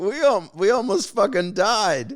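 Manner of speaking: laughing hard, words broken by belly laughs. Retelling what someone said after a balloon crash: imitating someone laughing hard. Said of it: "he's laughing his head off".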